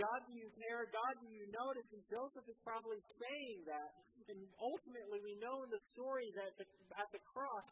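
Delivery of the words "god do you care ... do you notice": usual speaking voice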